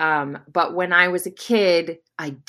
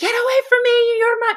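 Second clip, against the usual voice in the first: imitated screaming, higher pitch; 3 dB louder than usual. Retelling screaming at a man as a furious child: retelling a scream. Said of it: "I was screaming at the top of my lungs".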